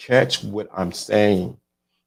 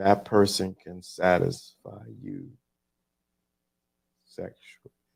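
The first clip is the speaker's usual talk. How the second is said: deliberate, very slow, stretched-out delivery; 2 semitones lower, 7 dB quieter than usual. Saying one line on purpose, very slow. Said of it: "See how I said that real slow?".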